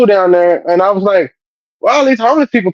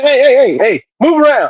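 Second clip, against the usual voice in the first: pitched-up, commanding police officer voice; 5 semitones higher than usual. Retelling how police shoo off crackheads: imitating a police officer. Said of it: "And the police is, like".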